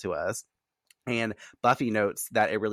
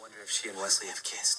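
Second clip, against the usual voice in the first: altered, distorted voice, quieter; 6 dB quieter than usual. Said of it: "in a distorted voice".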